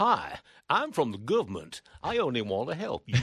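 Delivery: appalling, fake put-on American accent. Quoting a well-known phrase to the others, in an appalling american accent. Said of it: "That was an appalling attempt at an American accent".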